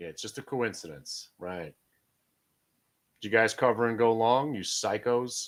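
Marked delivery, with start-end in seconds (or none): 0.0-1.3 whisper with sarcasm laid on thick. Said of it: "That's sarcasm".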